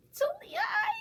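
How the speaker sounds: very high, loud, squeaky troll voice. Reading a story aloud, the troll answers from the river in a squeaky troll voice. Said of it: "the troll squeaked".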